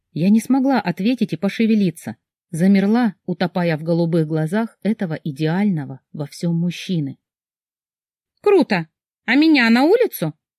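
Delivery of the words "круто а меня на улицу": angry, outraged, indignant, pitched-up outburst. Ksyusha reacts to the narrator and the man; indignant. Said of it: "возмутилась Ксюша и зло ушла".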